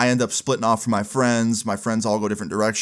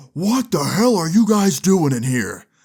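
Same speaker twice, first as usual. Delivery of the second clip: put-on furious full-lung scream, high-pitched; 7 semitones higher, 4 dB louder than usual. Retelling how a man walked into the gym, retelling a full-lung scream. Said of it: "screams at the top of his lungs".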